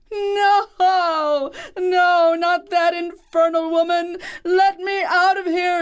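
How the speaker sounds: very high, loud, drawn-out screech. The devil hears his mother-in-law has come to see him, shrieking. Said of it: "shrieked the devil".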